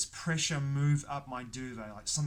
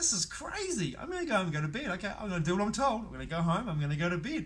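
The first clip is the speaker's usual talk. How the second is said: high-pitched words through hysterical fits of laughter; 6 semitones higher than usual. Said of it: "hysterically laughing".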